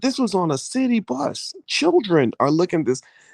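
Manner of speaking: put-on very high, wildly swinging, outraged scream. Retelling how a man reacted to an album ad on a bus: imitating someone screaming. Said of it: "just starts screaming and cussing and yelling".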